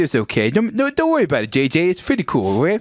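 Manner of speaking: derisive, mocking put-on voice. Describing a coworker, the speaker shows how he talked: imitating a coworker's voice. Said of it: "he talked like this".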